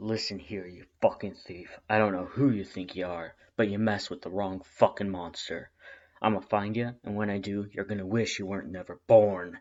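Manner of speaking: very deep, gruff, aggressive voice. Reading a story aloud, voicing a caller on the phone in a low, gruff voice. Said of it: "Then a low, gruff voice, deeper than the last".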